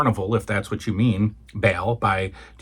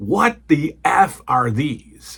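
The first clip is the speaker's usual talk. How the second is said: put-on long, slow, high, wailing scream; 5 semitones higher, 4 dB louder than usual. Retelling a girlfriend finding toys at 2 a.m.: imitating someone screaming. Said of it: "And she screams".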